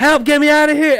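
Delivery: very high, shrill, loud, panicked scream. Retelling being stuck in a drowning tank: retelling own scream. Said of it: "And as I'm screaming".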